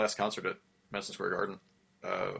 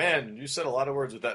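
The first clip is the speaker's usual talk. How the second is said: ordinary talk, nothing marked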